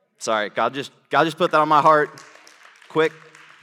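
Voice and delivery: passionate outburst.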